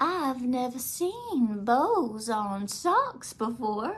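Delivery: put-on old-fashioned Southern belle talk. Speaker quotes Meemaw during a visit: imitating Meemaw's Southern belle talk. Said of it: "talks like, I don't know, this old Southern belle".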